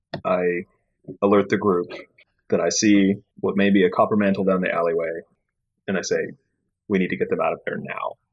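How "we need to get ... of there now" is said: quiet, hushed, under-the-breath voice kept soft. Alerting the group to what they see down the alleyway, in a hushed tone. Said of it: "in a hushed tone".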